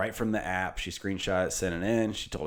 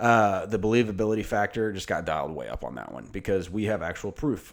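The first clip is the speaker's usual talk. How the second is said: plain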